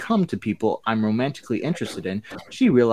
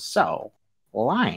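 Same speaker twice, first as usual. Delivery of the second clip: barking vintage newsreel announcer voice. Reading Blair's line aloud, in a 1930s news reporter voice. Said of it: "Why does Blair sound like she's a 1930s news reporter?".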